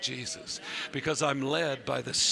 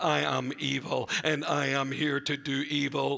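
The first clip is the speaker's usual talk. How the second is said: bad, flat, droning robotic monotone. Voicing the enemy announcing it is here to do evil, bad Dalek voice. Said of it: "That sounded like a really bad Dalek".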